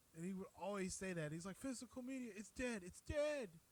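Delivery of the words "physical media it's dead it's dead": very high, insistent, hammered-home delivery. Quoting a friend's favorite line about physical media: imitating Rainier. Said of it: "I'm gonna do my best impersonation".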